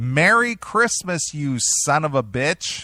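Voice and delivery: acted, high-pitched scream. Retelling how she threw the gifts out: imitating someone screaming. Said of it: "she screams out the door".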